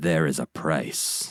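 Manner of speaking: deep, grave, very slow dramatic narrator voice. Quoting what the narrator says, imitating a very dramatic narrator. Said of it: "in a very dramatic tone".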